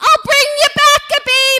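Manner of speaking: very loud, very high, full-throated top-of-lungs yell. Being rushed down a hospital ward on a gurney, retelling a yell at full volume. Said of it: "at the top of my lungs".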